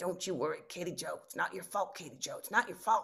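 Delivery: speaking in a man's voice. Retelling what a mother with Alzheimer's once said: imitating a man's voice. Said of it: "she started speaking in this man's voice".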